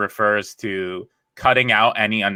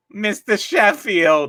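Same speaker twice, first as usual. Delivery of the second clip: very high-pitched put-on voice; 12 semitones higher than usual. Joking with other comics, doing a quick impression: Fran Drescher voice. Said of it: "That's my Fran Drescher".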